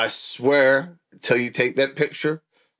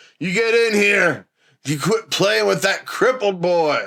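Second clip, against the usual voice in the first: put-on pitched-up, angry, abusive drunk father voice; 7 semitones higher, 4 dB louder than usual. Acting out a role in Stephen King movies: put-on angry drunk dad. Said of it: "I'm gonna play angry, somewhat abusive, drunk dads".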